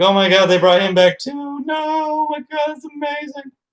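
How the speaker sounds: very high sobbing, voice rising sharply. Acting out how they would have reacted to a show scene: mock sobbing. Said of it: "just sobbing".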